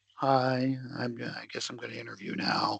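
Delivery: unenthusiastic. Showing how someone might walk into a job interview, unenthusiastic. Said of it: "If you walk in and you're like".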